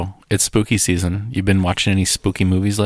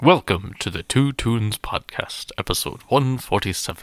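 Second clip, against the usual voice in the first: put-on mock announcer guy voice; 2 semitones higher than usual. Opening the podcast episode: put-on announcer voice. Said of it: "what voice would you say that is there".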